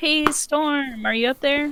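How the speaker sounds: calling out, voice projected upward. Calling up to someone in the crow's nest: yelling up to someone. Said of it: "yell up to him".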